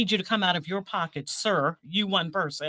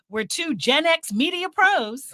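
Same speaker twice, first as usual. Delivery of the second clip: very drawn-out, high, slow podcast announcer voice; 8 semitones higher than usual. Doing another take of the show tagline: podcast voice. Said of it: "I'm trying to get the podcast voice".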